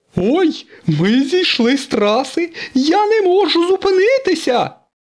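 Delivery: pitiful, plaintive, very high cry. Stuck in a skid off the track, a car cries out, plaintive shout. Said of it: "жалібно закричав сирник".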